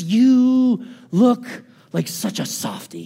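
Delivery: little demon voice, slow and swooping. Describing an inner voice that speaks up while they dance, little demonic voice. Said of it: "this little demonic voice".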